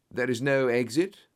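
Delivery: ordinary delivery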